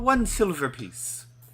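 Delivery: very high-pitched, slow put-on Irish accent. Voicing a character who names the price, one silver piece: irish accent. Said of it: "I think I'm Irish now".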